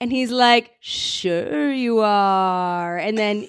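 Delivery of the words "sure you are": lazy drawl stretching out the last word "are". Retelling a street encounter, asked for an impression: Pauly Shore impression. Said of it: "this has to be an impression, too".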